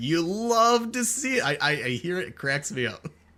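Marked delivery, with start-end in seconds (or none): 0.0-1.4 high, slow, put-on hype catchphrase-style delivery. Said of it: "I hear your voice from people".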